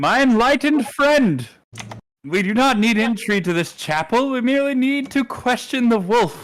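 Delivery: very loud, high-pitched yelled call. A player's character calls to a friend from across the courtyard, yelling across a courtyard. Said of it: "I'm gonna yell from across the courtyard".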